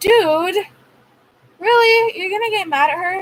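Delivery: high, incredulous outburst. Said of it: "And I'm like".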